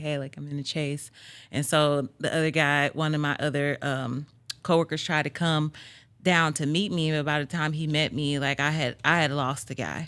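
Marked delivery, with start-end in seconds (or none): 0.0-1.1 put-on shaky, trembling voice, quieter. Retelling his radio call during a chase, imitating his shaky voice. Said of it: "my voice is kind of shaky".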